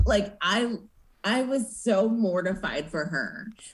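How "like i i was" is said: ordinary delivery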